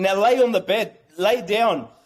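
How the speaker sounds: usual speaking voice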